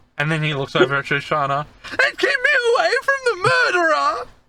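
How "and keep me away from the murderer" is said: very high, cowering, terrified, frightened begging. Storyteller voicing a cowering man pleading with the party, frightened cowering plea. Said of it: "cowering in front of you".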